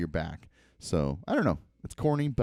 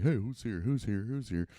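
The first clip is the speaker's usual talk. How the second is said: dog character voice; 3 dB quieter than usual. Retelling how the dog Tucker greets a car arriving: voicing the dog Tucker. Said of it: "and he's kinda like".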